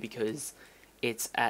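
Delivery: voice suddenly cracks mid-phrase. Speaker explaining a plan mid-sentence, with a voice crack. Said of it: "that was just a voice crack".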